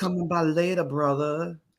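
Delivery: put-on Louisiana Southern accent. Speaker finishing a swamp bit with others, in a louisiana southern accent. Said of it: "a little bit more of the Louisiana Southern in the voice".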